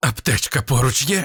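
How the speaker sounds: squeezed-out, strained voice. Narrator reads the commander's question to his comrade in a dugout under fire, strained, choked voice. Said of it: "здавленим голосом запитав Кольт".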